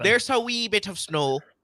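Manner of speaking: laid-on Irish accent. Talking to the others and slipping into an irish accent. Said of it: "your Ireland voice?".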